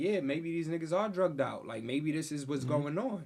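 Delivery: normal talking voice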